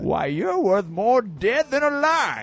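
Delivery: put-on grumpy, cranky old man voice. Quoting a movie line to the others: grumpy old man voice. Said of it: "That sounded like Dana Carvey doing the grumpy old man".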